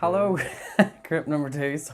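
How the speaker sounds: speech broken up by giggles, talking through laughter. Greeting the second group right after a blooper moment, laughing. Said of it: "Sorry for laughing".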